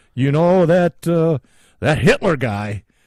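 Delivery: put-on Canadian accent. Joking about what someone might say of Hitler: put-on Canadian accent. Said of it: "Doing a Canadian accent there".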